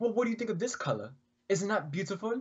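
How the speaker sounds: very high-pitched put-on British accent. Reading a quote aloud on request, british accent. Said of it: "Will you do it in a British accent?".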